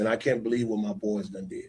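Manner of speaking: put-on sad tone. Retelling how a man called after hearing from the DA, imitate his sad voice. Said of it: "sad voice".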